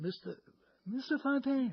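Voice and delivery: put-on very high little-kid voice. Retelling how he addressed penalty killer Val Fontaine, in a little high kid's voice. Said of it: "a little high kid's voice".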